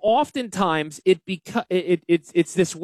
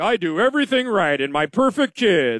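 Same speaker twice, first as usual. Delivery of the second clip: mocking, arrogant, smug know-it-all voice. Mocking an arrogant blowhard who claims to do everything right: imitating an arrogant blowhard. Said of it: "the arrogant blowhard who's just like".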